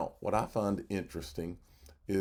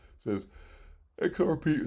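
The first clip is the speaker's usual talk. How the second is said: speech through a yawn, drawn out and high; 8 semitones higher, 4 dB louder than usual. Reading a price analysis aloud, speaking through a yawn. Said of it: "sorry, I'm yawning".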